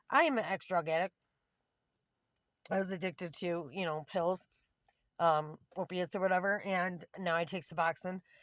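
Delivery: plain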